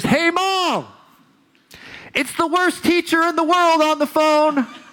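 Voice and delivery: mock very high-pitched, shrill shouting. Retelling shouting up the stairs to Mom about a call: retelling own past shout. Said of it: "I shout up the stairs".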